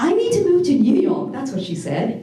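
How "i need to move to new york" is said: sudden, very loud, high, shrill outburst, put-on. Retelling what she suddenly said in the house, quoting in a very loud voice. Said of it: "suddenly said in this very loud voice".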